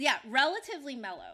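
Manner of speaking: "relatively" emphasized. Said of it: "Relatively, emphasis on that word".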